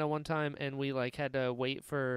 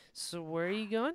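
mock drunk woman speech, higher; 6 semitones higher than usual. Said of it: "this one woman got so drunk".

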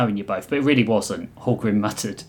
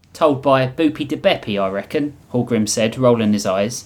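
usual speaking voice

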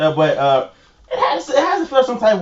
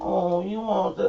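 put-on very soft, hushed, cooing cutesy baby talk; 9 dB quieter than usual. Recalling a girl at work using baby talk on him, imitating baby talk. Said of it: "trying to hit me with the baby talk".

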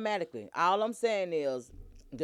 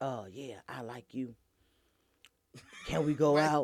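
very low, menacing, creepy killer-like voice; 7 semitones lower than usual. Demonstrating how he would ask someone out, sounding like a serial killer. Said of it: "Why you gotta say like a serial killer?".

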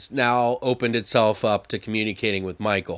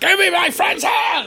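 put-on very high-pitched, shrill, loud crazed drunk yell; 5 dB louder than usual. Retelling a scene where a man fights over his friend's hand, imitating a drunk man. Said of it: "He's all drunk and like crazy".

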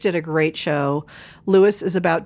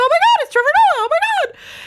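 very high, loud, giddy schoolgirl squealing; 5 dB louder than usual. Retelling meeting a celebrity before his show: imitating excited schoolgirls. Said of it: "Rain and I are, like, schoolgirls".

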